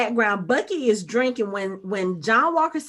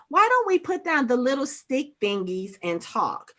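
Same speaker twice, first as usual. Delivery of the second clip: plain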